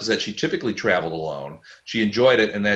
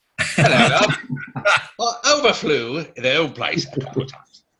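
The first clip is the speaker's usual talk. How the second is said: put-on old-fashioned English accent, pitched up; 5 semitones higher than usual. Suggesting how a character might say his line, try an old English accent. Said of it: "say it in like an old English accent?".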